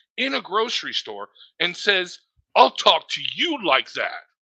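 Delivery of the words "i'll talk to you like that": mock-menacing, put-on threatening tone. Retelling what Kenny said to a stranger in a grocery store, mock-menacing threat. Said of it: "very threatening and menacing".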